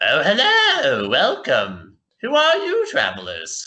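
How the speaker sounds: high, slow, swooping voice. Voicing a halfling professor greeting travelers at the door: Professor Wigglebum voice. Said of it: "this halfling ... and he's like".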